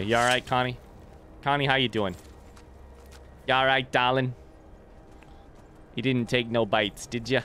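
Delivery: put-on New York accent. Playing a Nord and checking on someone near the spiders, in a New York accent. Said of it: "I'm a Nord with a New York accent".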